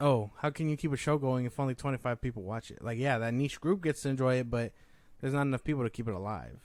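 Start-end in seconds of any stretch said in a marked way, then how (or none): none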